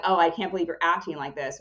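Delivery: ordinary delivery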